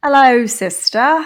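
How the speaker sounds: put-on British accent. Podcast host greets her sister during the show intro, in a put-on British accent. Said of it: "we do an accent".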